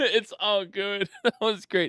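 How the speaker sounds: talking through laughter. Welcoming viewers back after a funny moment, laughing while talking. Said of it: "I'm laughing so much".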